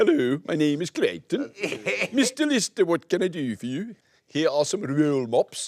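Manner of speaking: put-on Swedish accent, high pitch. You're showing the Swedish voice you tried, which came out a bit like the Swedish Chef. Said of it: "a bit like the Swedish Chef".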